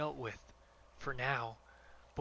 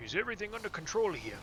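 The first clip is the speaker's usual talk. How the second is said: put-on dwarf character voice, higher pitch; 5 semitones higher, 4 dB louder than usual. Voicing a line aloud, make a first attempt at a dwarf voice. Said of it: "That was my attempt at a dwarf voice".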